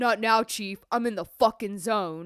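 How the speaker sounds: put-on cocky voice. Retelling a favorite scene where a gym guy ignores the check-in desk: imitating a cocky gym guy. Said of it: "And he says".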